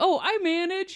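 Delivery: bright, delightful, cheerful, very high voice. Retelling own reply to a man on the phone asking for a manager, a cheerful quip. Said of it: "I thought I was being like delightful".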